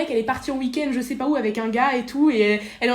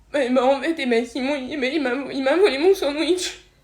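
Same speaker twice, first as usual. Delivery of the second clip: put-on sobbing kid voice, words hard to make out. A child tells an adult why they are upset, sobbing. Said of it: "je comprends rien, articule".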